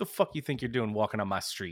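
put-on voice with mock anger. Acting out a story about a man in town mad at a bear, imitating Daniel getting mad. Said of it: "He got mad at a bear".

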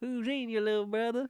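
drawn-out, put-on southern US drawl. Quoting a movie character's line: imitating a southern drawl. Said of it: "with a southern drawl".

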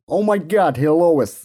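loud, high, big goofy cartoon-dad voice. Slipping into the voice right after admitting you keep doing it, Peter Griffin voice. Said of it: "You keep going into like a Peter Griffin".

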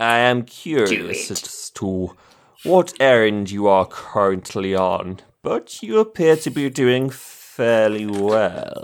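slimy, oily, sleazy emperor voice. Voicing a character who addresses juliet, in a sleazy voice. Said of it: "yeah more sleazy".

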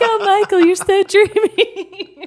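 play-acted lovestruck swoon, very high, very loud, drawn out. Retelling own past reaction to a game character: imitating being enchanted. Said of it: "so enchanted. I was like".

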